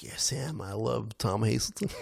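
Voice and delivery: young man's put-on American accent. Retelling what a young fan said about his favourite player: imitating an American accent. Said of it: "He's got an American accent".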